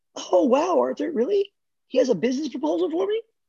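very high, dead-serious put-on voice. Showing how she would respond, in her Karen voice. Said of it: "I'm doing my Karen voice".

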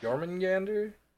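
high, swooping, thrilled, animated excitement. Reacting to the name of a Norse dragon: excited. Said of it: "I have not heard you be that excited".

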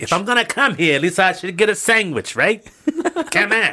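jumbled mix of German, Greek and Italian accents. Doing a bit for the others, speaking in a mixed European accent. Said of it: "What accent is that?".

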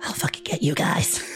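whispered, tiny squirrel-like critter voice. Voicing a squirrel creature fleeing up a tree: voicing a squirrel creature. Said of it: "he's like".

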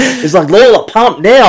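high, yelled, screaming voice. Retelling how the new kid screamed at her to pump the ball, retelling a scream. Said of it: "Screamed at me to pump the ball".

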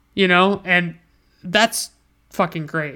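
ordinary delivery

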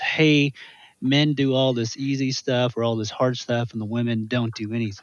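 ordinary talk

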